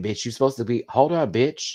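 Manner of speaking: usual speaking voice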